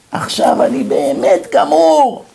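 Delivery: very high, sobbing, wailing cry. Retelling what a teenage caller said, imitating him crying and shouting. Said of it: "בוכה, צועק".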